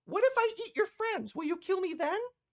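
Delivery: very high, tiny, small fairy-dragon creature voice. Voicing a small fairy dragon who greets a player: small fairy dragon voice. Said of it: "this fairyish small looking dragon".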